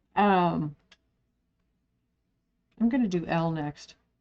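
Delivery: talking with mouth full, chewing. Talking mid-snack, eating a cracker. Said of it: "sorry, eating a cracker".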